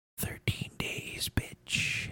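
hushed, very quiet, breathy, barely voiced whisper. Retelling what a man whispered after a handshake, retelling a whisper. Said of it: "and he whispers".

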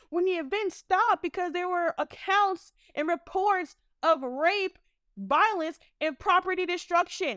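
furious ranting tirade. Speaker calling out the men they address as y'all, furious. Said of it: "I'm fucking furious".

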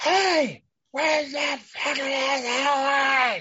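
imitated shout. Retelling a story where a man nearby suddenly calls out; imitating a stranger yelling. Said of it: "You just hear".

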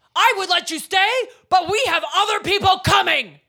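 high-pitched, loud voice. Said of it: "loudly announces".

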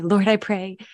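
mock prayer-like tone and tempo. Retelling how they copied that prayer manner: imitating own past prayer tone. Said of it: "I started praying that way".

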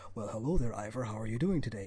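very low, very pleasant deep baritone. Retelling a game scene where an elk greets Ivor: very nice baritone. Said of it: "in a very nice baritone".

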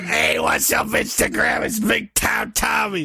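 raspy, swooping, hyped-up wrestler promo voice. Speaker opens an instagram video, wrestler giving a promo.

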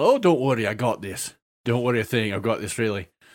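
very bad put-on dwarf Scottish accent. Retelling playing a dwarf who reassures everybody else; very awful scottish accent. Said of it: "I always talk with a very awful Scottish accent".

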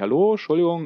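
put-on very friendly tone. Retelling stopping a grinning man to ask for a park; acting out a very friendly hello. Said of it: "ganz freundlich".

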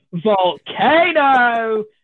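mock high, full top-of-the-voice shout. Retelling leaping up in a restaurant, retelling a top-of-voice shout. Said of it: "at the top of my voice go".

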